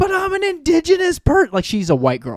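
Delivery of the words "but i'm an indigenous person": put-on very high, drunken protesting yell. Retelling a drunk woman yelling during a breathalyzer test; retelling her yelling. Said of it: "And she's yelling".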